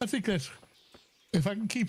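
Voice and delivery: yawn breaking into words. Streamer talking to viewers, yawning while talking. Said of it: "I was yawning while talking".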